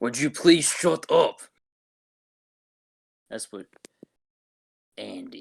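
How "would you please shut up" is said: bad, rough wrestler voice, pitched up high. Doing an impression after being called rusty: terrible Drew McIntyre impression. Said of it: "That was a terrible Drew McIntyre impression".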